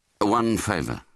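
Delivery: plain reading voice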